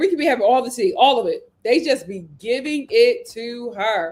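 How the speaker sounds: plain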